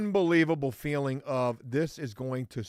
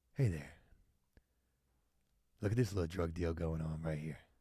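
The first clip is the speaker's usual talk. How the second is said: very low, deep-pitched voice; 8 semitones lower, 9 dB quieter than usual. Joking about a drone voiceover while watching a drug deal: Bob Ross voice. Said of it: "doing the voice my damn self".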